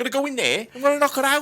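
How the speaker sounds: very high, fake put-on Liverpool Scouse accent. Talking about a character on a show, voicing her in a put-on Scouse accent. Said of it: "she'd be like Scouse or something".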